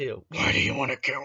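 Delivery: mock growling voice. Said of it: "that type of".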